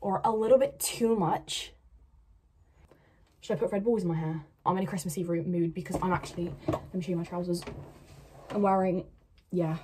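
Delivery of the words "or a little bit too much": slow, put-on American accent. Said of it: "They use, like".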